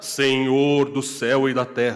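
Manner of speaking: solemn, loud, slow, affected preaching intonation. Retelling someone who suddenly began praying mid-conversation, imitating an affected prayer voice. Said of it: "A pessoa impostava".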